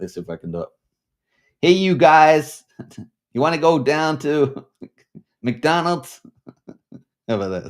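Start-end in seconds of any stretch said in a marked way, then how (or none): 1.6-6.2 put-on Californian valley accent, high and loud. Speaker tries out an accent for listeners: valley-style american accent. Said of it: "I'll try and do an American accent".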